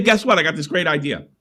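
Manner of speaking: ordinary talk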